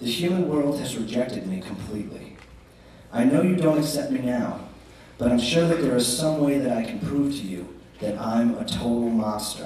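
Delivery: ordinary delivery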